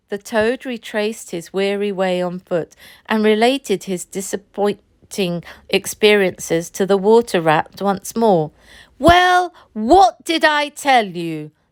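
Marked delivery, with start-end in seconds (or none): 9.0-11.4 very cross, raised-pitch scolding tone. Narrator reading the rat's reply to the toad, very cross. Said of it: "said the rat very crossly".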